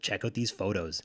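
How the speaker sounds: usual speaking voice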